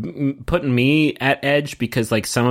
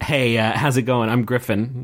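plain

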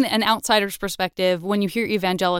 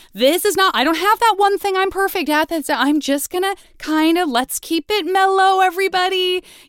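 put-on high-pitched teenager voice. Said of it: "in a sort of teenage way of".

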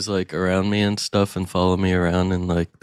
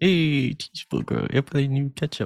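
mock baby talk, much higher pitch; 7 semitones higher than usual. Teasing a co-host by repeating their words to a cheeseburger, mock baby talk to food. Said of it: "You're talking to the cheeseburger now?".

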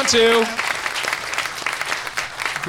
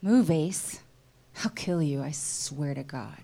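dramatic reading from a script; 6 semitones lower, 7 dB quieter than usual. Reading a scene from a summer film aloud with others: dramatic reading. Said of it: "we're doing a dramatic reading".

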